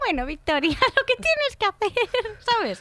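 put-on high-pitched elderly woman voice. Asked which of her voices to do, the speaker shows her old lady voice. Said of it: "La anciana que habla así".

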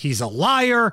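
ordinary talk

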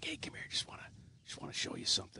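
soft, hushed whisper. Retelling calling over a kid from the other team: imitating a whisper. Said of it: "I kinda whispered".

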